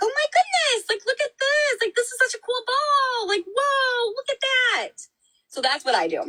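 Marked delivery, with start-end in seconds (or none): 0.0-4.9 cheerful, very high voice, full of wonder. Showing how to redirect a child having a tantrum: happy voice. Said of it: "make your voice go happy".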